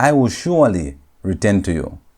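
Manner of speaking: ordinary talk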